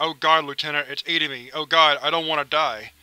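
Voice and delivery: acted child voice, crying and screaming in terror. Recounting a kid being pulled inside and crying out to the Lieutenant: imitating a kid crying in terror. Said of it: "He was crying".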